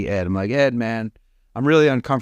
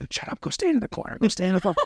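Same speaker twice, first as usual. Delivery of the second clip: hushed, whispered voice; 9 semitones higher, 6 dB quieter than usual. Retelling what a man whispered in the speaker's ear: retelling a whispered order. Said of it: "Like whispering this in my ear".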